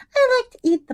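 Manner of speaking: tiny, tinkly, very high, cute little voice. Retelling what she said, imitating her cute little voice. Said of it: "and she was like all cute".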